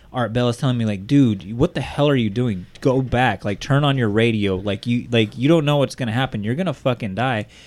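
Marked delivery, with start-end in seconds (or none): none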